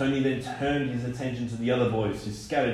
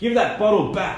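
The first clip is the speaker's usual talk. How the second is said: breathless, insistent, higher and louder; 8 semitones higher, 7 dB louder than usual. Mr McNumpty, among the marauding boys, makes a breathless demand. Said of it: "Mr McNumpty demanded breathlessly".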